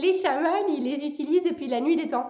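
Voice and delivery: quacking duck voice. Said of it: "je prends toujours une voix de canard".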